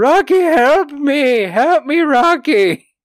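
play-acted shrill, very high blubbering cry. Retelling how Paulie rolls in the snow calling for Rocky: imitating Paulie blubbering. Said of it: "he's just blubbering".

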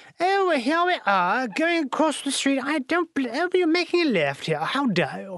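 theatrical British accent. Speaker demonstrates what he says while driving, in an old-timey british accent. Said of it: "theater school grade British accent".

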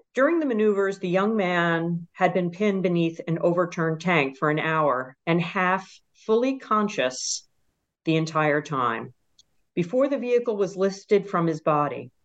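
ordinary talk

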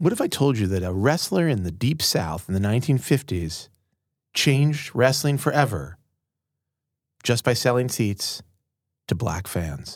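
put-on radio broadcast announcer voice. Asked to say a dramatic intro line, the speaker uses a radio voice. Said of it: "when he heard my radio voice".

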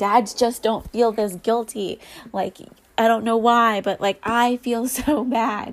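words choked out through sobs, guilt-ridden. Retelling own words said while crying over mom guilt: retelling own crying words. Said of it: "I was literally crying over the guilt yesterday and was saying".

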